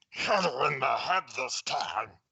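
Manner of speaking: gargling creaky character voice. Narrator voices a masked thug beside a fellow with a pistol, gargling, creaky voice. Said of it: "a gargling, creaky voice say".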